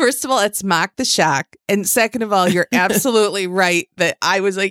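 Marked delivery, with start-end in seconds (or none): 0.6-1.6 put-on Boston-style accent. Correcting how a man's self-given nickname is said, boston accent. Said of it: "You do it so well. I cannot do a Boston Mark the Shark".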